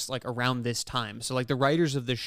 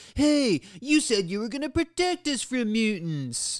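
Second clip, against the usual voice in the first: mock very high, stretched-out, complaining yell; 10 semitones higher, 4 dB louder than usual. Retelling a scene where a character shouts into a walkie-talkie: imitating someone shouting. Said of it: "He sort of shouts out".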